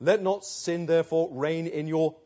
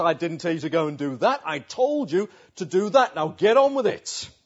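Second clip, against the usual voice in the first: acted sharp, loud, rising raised voice; 5 dB louder than usual. The speaker acts out him ordering us to get on with it, retelling a raised voice. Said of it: "he raises his voice".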